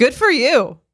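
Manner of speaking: upbeat, encouraging, high, loud pump-up cheer. Suggesting a remark was meant encouragingly: encouraging pump-up tone. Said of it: "Maybe she meant it in a pump-up way".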